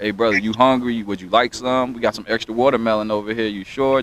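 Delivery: normal talking voice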